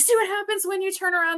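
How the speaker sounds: screaming taunt, voice pitched way up high. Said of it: "I'm screaming at the T V".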